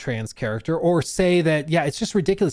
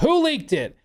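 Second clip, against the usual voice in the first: shrill, very high, enraged angry shout; 10 semitones higher than usual. Imagining a man storming out of a tree bakery, imitating Todd really angry. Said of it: "really angry".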